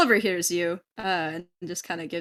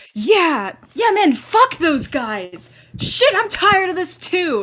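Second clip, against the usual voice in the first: very loud, high, swooping, drawn-out crowd shouting; 12 semitones higher, 9 dB louder than usual. Voicing a crowd joining a speaker: crowd raising their voices. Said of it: "the crowd kind of raises it with you".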